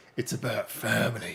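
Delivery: rough, gruff, breathy whispered voice. Quoting a film line as a reference, in a gruff voice. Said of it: "Gruff voice".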